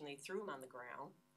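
ordinary talk, nothing marked

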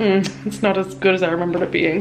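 normal talking voice

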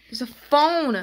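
loud, freaked-out, caught-off-guard blurt. Unpacking accessories and spotting a phone again, freaking out. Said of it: "Sorry, I'm just freaking out".

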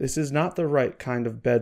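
ordinary delivery

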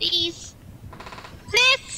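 high, slow, scared pleading.

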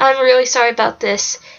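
ordinary delivery

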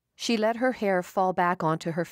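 ordinary delivery

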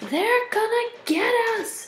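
shrill, very high-pitched shout. Sydney in class, after Miss Mackle says two ants are missing: shouted. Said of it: "Sydney shouted".

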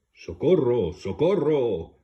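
very loud, booming, bellowing bear-like roar. The bear, hearing a loud voice from the rabbit's burrow: roaring for help. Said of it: "Rugió el oso".

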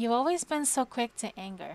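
plain reading voice

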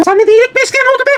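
shouting. A woman arguing back at a man in a heated dispute: raising her voice. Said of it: "Hanımefendi sesini yükseltme lütfen".

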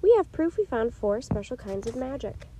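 plain

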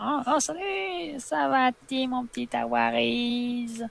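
put-on doting grandma voice. Talking to viewers while meeting Granny, answering as Granny in her grandma voice. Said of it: "avec sa voix de mamie".

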